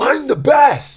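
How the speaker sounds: put-on very high, slow, boastful weird kid voice.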